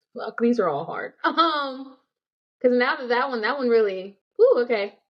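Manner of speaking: tearful, crying through the words. Answering hard questions aloud, shaken by the last one, crying while talking. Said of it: "I'm crying".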